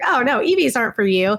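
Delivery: ordinary talk, nothing marked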